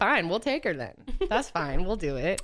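ordinary talk

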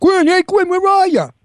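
very high-pitched put-on Brooklyn accent. Redoing a movie line calling out for Deputy Quinn: Brooklyn accent. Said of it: "I had to do it with the Brooklyn accent".

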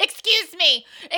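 play-acted very loud, very high, shrill angry cry. Retelling pushing down an escalator past people: imitating an angry "excuse me". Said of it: "that's me pushing through".

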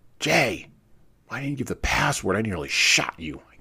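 loud, high gasping words. The narrator speaks to his friend jay, whom he nearly shot: gasping. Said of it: "I gasped".

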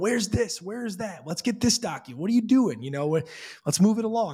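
loud yelling, pitched high. Retelling how eager buyers push to close fast: imitating buyers yelling. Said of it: "They're yelling at me going".

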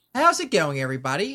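rogue voice with just a little grit. Showing off the voice of a new D&D rogue: Afton voice, a bit like Slip. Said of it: "a little bit like Slip, but a little less gritty".

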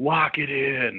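put-on yelling. Describing a player jumping offside: imitating someone yelling. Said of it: "somebody yells".

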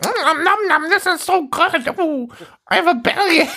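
very high, squeaky, absurd cartoon squirrel voice. Speaker imitates the narrating squirrel from a movie skit, absurd squirrel voice. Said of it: "this fucking absurd squirrel voice".

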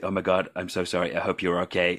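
put-on quick whisper. Retelling an apology to a scene partner after a fall: imitating own quick whisper. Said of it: "I whispered into her ear very quickly".

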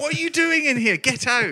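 very high-pitched Scottish brogue. Acting out someone telling a person to get out, put-on high-pitched Scottish accent. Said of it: "high pitched Scottish accent".

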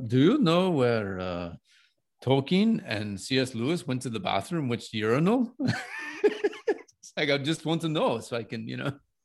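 terrible, clumsy put-on German accent. Retelling a man asking the bartender a question, terrible German accent. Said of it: "it's my terrible German accent".

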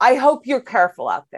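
play-acted, mildly patronising, slightly condescending tone. Retelling what an older woman said after stepping out of a car: mimicking slightly condescending tone. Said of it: "is she being kind of condescending?".

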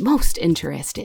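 muttering and mumbling to herself. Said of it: "muttering to herself and she's like".

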